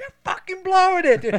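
shrill, very loud, high-pitched shouting. Retelling a movie scene where John C. Reilly calls out the coach: imitating yelling. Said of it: "them just yelling at each other".

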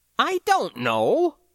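very high-pitched, flustered, caught-off-guard voice. The narrator replies to a question, quite flustered. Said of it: "quite flustered".

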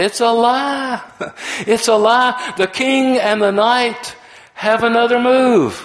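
slow, very high, drawn-out scream. Retelling a story of a guy before a chess painting: acting out a scream. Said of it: "he sort of screamed out".

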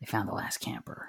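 secretive whisper from the corner of the mouth. Voicing a ranger who leans in and tells the group: whispering out of the side of mouth. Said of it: "she kinda whispers out of her mouth".

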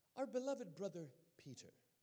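put-on, affected, soft, gently sweet British accent. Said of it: "comes walking up to me with her British accent".

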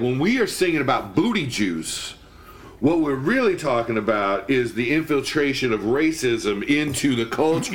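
ordinary talk

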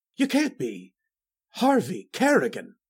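with a gasp. Narrator reads Devereaux recognizing the mocking visitor, gasped. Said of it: "gasped Devereaux".

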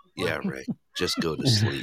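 put-on muttered aside. Speaker quotes what she said after the grandbaby called; retelling a mutter under her breath. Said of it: "she's saying under her breath".

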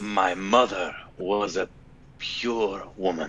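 very slow, drawn-out, seductive voice. Imitating Banderas saying a line: Banderas seductive voice. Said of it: "Banderas just doing his seductive voice".

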